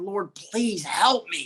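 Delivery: play-acted slow bawling, sobbing throughout. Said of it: "I'm crying and I'm bawling".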